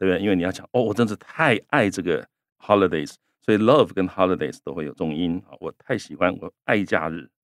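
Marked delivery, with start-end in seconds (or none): none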